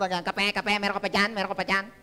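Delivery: put-on low alien voice. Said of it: "Ganun ang boses nila eh".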